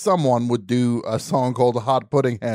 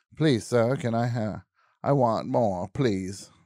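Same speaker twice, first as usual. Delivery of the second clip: slow, pleading, really begging; 6 dB quieter than usual. Acting out the famous orphan's plea for more food: imitating Oliver Twist begging. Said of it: "Oliver Twist, yes. He's like".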